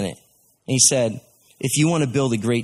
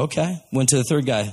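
normal talking voice

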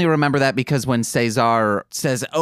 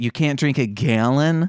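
full-on Michigan accent on the A in gallon. Chatting with a co-host who notices how his A's sound, Michigan accent. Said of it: "That's my Michigan accent coming out".

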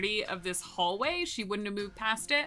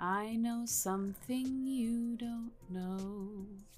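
soft, barely-there half-whisper, drawn-out know; 7 dB quieter than usual. In a tabletop game, the character takes a few casual steps forward, half-whispering. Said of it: "she's just going to whisper".

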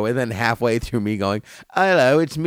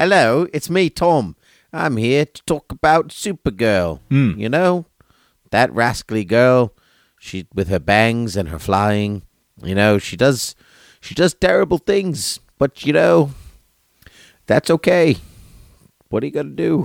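put-on English accent; 4 dB louder than usual. A co-host introduces himself as his evil twin, in Tom's put-on English accent. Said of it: "that sounds English".

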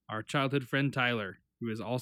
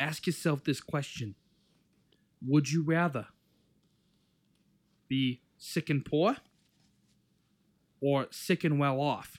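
put-on heavy Italian accent, laid on thick; 3 semitones higher than usual. Quoting a man who kept reselling land as he asks a question, thick Italian accent. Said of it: "He's like thick Italian accent".

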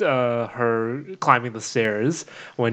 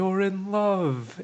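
put-on wistful old woman voice, pitched up; 8 semitones higher than usual. Recounting a favorite scene, imitating a wistful old lady. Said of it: "in like that like wistful old lady voice".

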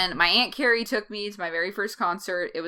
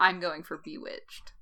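put-on proud tone, quieter; 4 dB quieter than usual. Retelling a reply to friends about a concert: imitating saying it proudly. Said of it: "You said that with pride".

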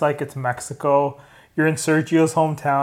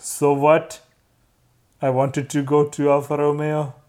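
put-on weird, offhand Indian accent, shrugging tone. Discussing racing drivers, imitating Kimi: weird Indian accent as Kimi. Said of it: "Why am I doing a weird Indian accent?".

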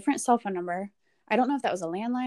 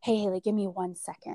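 mock whispering. Retelling what a woman said on a consult call: imitating someone whispering. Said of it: "she's whispering".

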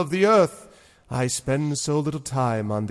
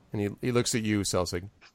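plain

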